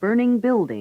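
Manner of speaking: secondary, lighter stress on burning, main stress on building. Pronunciation drill on participle-noun pairs: secondary stress on burning. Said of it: "Present participles used to modify nouns have secondary stress".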